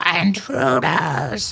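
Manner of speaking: startled goblin voice crying out in mild alarm. A game master voices a goblin shouting down at the party from above, goblin shouting. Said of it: "a goblin shout out".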